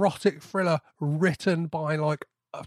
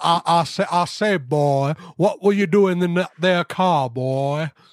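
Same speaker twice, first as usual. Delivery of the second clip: put-on blustering Southern accent; 7 dB louder than usual. Quoting an actor playing a cop interrogating someone, Foghorn Leghorn impression. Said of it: "doing his like utmost best Foghorn Leghorn impression".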